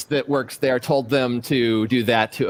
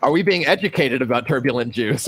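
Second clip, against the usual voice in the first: ordinary talk, nothing marked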